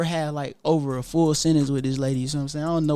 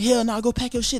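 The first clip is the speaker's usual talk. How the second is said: mock angry ranting, much higher; 7 semitones higher than usual. Retelling an angry exchange with him, imitating him going off. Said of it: "He going off".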